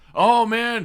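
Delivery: sarcastic, mock promo announcer voice.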